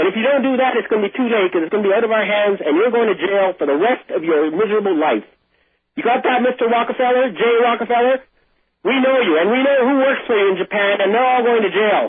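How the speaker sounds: heated, wrathful, accusing angry tirade. Speaking directly to the man he accuses, in an angry tone. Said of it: "I'm sorry I get this angry tone".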